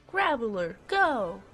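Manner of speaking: poorly done high cartoon character voice. Sending out a monster in a game, trying an Ash Ketchum impression. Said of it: "I was trying to impersonate, uh, Ash Ketchum".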